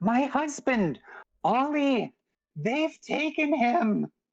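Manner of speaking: very high, frantic woman's outcry. Game master voices a woman grabbing the player amid villagers with torches, frantic woman. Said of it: "A frantic woman grabs you and says".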